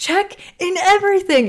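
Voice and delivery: shrill, very high screaming cry. Speaker retells a woman stopping right before a toll booth, retelling a scream. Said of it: "And she's like screaming".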